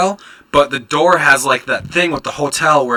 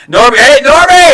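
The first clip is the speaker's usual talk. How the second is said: very high, loud, carrying yell; 11 semitones higher, 10 dB louder than usual. Speaker retells calling for Normie in the wrong room, retelling a yell. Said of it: "And I'm like yelling in the room".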